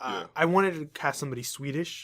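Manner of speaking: ordinary talk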